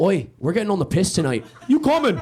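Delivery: put-on Irish accent. Retelling how Irish roommates invite you out: imitating Irish friends. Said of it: "The Irish will go".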